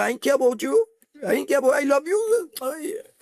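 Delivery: high, angry shout. Explaining tone of voice, the speaker acts out shouting at a mother. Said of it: "you're shouting at the mother".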